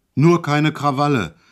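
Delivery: sudden, loud, roaring bellow. During a ride, a man suddenly bellows at the narrator; suddenly bellowing. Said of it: "brüllte er auf einmal los".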